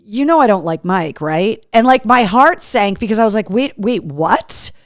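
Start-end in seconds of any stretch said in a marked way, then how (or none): 0.2-1.7 mock deadpan, flat delivery. Retelling what a guy in the group photo said: retelling a deadpan remark. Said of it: "Joe deadpan says".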